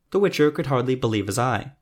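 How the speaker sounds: ordinary delivery, nothing marked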